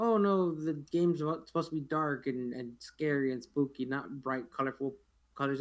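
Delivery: normal talking voice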